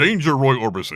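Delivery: very loud, booming sci-fi robot voice. Showing how easy the requested robot line is: Lost in Space robot voice. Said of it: "I want him to do the robot from Lost in Space".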